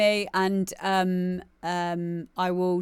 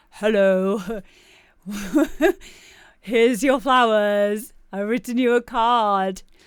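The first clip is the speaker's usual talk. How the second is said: loud, slow, mock-formal romantic tone. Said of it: "seems weird to us to be like".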